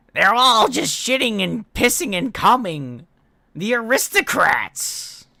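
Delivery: high-pitched shrill yelling. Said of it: "read this in Gilbert Gottfried's voice".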